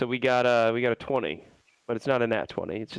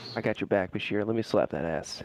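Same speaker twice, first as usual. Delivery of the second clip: faint mumbled whisper, muttered; 3 semitones lower, 4 dB quieter than usual. The speaker mumbles to himself about bashir: faint mumbled whisper. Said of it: "Mumbled to himself. Whispers into his ear. I kind of whisper that to myself. faint whisper".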